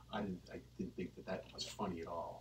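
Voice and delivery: whispered, very soft, barely above the breath. After a comedy set, recounting what a man said while shaking hands, retelling a whisper. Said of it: "he was whispering it to me".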